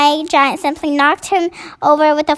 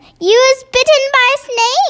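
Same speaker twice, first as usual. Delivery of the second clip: shrill, very high-pitched shout; 10 semitones higher than usual. The BFG, seeing his chance, shouts at a coward grabbing his ankle. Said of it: "he shouted".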